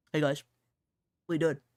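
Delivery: loud, easygoing, casual voice. Retelling how a friend greets everyone in voice chat: imitating East. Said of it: "he'll join this voice chat and be like".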